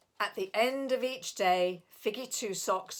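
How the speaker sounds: ordinary delivery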